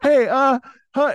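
put-on out-of-breath, wobbly, very high voice. Retelling walking up to her, in a put-on breathless, shaky voice. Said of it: "super out of breath and like shaky voice".

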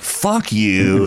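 normal talking voice

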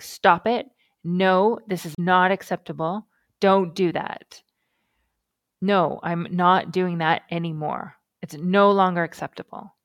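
firm, stern voice. Showing the tone you'd use to deter a puppy, the speaker demonstrates: stern. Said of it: "That same sort of stern".

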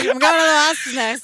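pretend drunk voice, slurred speech. Imagining ordering at a bar while drunk: pretend drunk slurring. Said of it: "Imagine saying that hammered".

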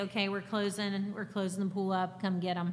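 usual speaking voice

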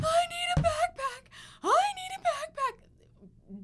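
shrill, slow, drawn-out, pleading, desperate scream. Retelling a girl screaming the whole way home in the car, retelling desperate screaming. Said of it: "she's screaming the whole way home".

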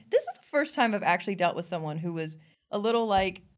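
ordinary talk

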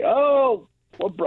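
put-on British accent, starting. Retelling a friendly airport security worker's greeting: started British accent. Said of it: "I'm not gonna try and do a British accent".

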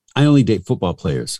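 plain

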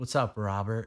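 acted whispering. Telling a story, acting out greeting a man in a loud place, retelling a whisper. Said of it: "I just whispers to him".

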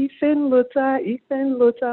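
high-pitched, drawn-out calling shout. Speaker recalls coming home to his mom shouting his name: retelling mom's shouting. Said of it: "she's shouting like".

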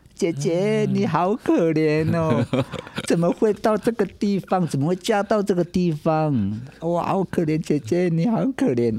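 tearful, high, drawn-out sobbing cry. Retelling how two people kept crying for an hour, imitating loud crying. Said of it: "这样一直哭".

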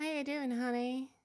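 put-on American accent. Coaching someone on an American accent, demonstrating it in an American accent. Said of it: "do an American that. Accent?".

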